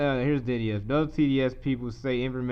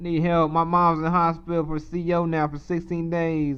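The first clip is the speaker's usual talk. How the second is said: put-on Southern US accent; 6 semitones higher, 5 dB louder than usual.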